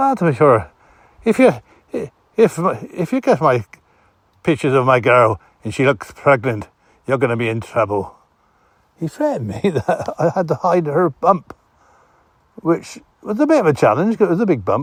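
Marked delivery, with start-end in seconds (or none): 0.0-8.2 put-on, threatening Irish accent. Retelling a drunk man's threat, in an irish accent. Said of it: "I won't try to mimic an Irish vo- uh, voice".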